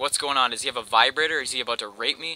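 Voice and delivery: ordinary talk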